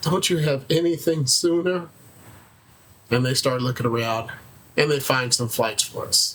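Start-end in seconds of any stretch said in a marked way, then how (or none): 0.0-1.9 woeful, most pitiful, begging, pleading voice. At an airline counter, retelling Janetta begging for an earlier flight: imitating Janetta's pitiful plea. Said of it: "pleads in her most pitiful voice".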